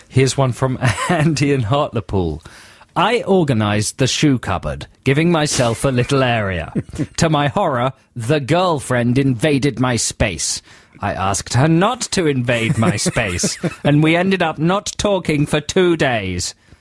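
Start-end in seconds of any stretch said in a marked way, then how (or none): 3.0-16.6 stiff, mechanical robot voice. Reading out a listener's submitted message, in a Nazi robot voice. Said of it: "he doesn't talk like a, a Nazi robot".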